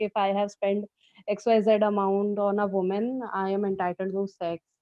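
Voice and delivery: ordinary talk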